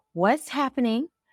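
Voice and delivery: high, frantic, panicked stammering voice. Retelling calling mom after seeing blood, reenacting own past panic. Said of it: "I'm panicking".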